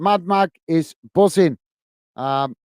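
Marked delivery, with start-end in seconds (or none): none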